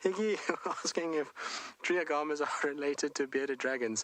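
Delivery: high delivery, words breaking up with laughter. Reading out a question someone asked, laughing while talking. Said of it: "I'm laughing not because of your question".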